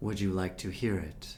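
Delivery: big, deep, booming voice. Voicing a helmed figure addressing the player, in a booming deep voice. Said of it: "This booming, deep voice washes over you".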